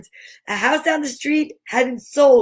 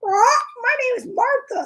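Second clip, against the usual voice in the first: very high, bird-like parrot voice; 9 semitones higher than usual. Reading a story aloud, voicing the parrot's line in an attempted parrot voice. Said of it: "I can't really do a parrot voice".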